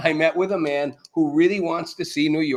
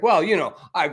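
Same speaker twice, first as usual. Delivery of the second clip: put-on stammering. Retelling how a politician dodged a reporter's question: imitating Mamdani stammering. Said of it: "He sort of stammers around".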